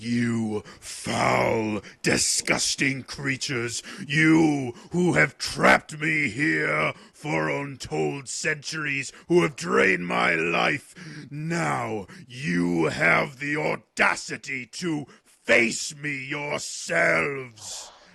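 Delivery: loud, rough, furious dragon-like roar, drawn out. Voicing the trapped beast as he speaks to the party in the common tongue, bellowing in rage. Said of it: "bellowing in rage".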